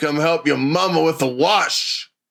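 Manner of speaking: put-on rural Southern voice. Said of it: "You sound like a plantation owner slash redneck".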